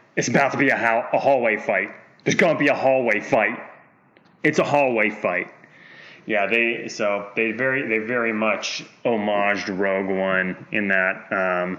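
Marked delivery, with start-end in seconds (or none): none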